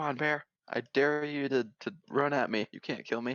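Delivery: defiant, goading taunting tone. Distracting a bear by taunting it in character: yelling at a bear. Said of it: "yelling at it".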